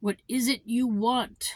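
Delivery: gruff, growly voice. Narrator reads the North Wind answering the boy at his door, in a growly voice. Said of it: "he asked in his growly voice".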